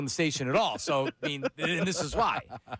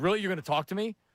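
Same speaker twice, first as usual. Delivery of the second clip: put-on ticked-off, mad, disbelieving, incredulous tone; 2 semitones higher than usual. Retelling how someone answered a goodbye, imitating someone mad. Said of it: "he was so mad at me".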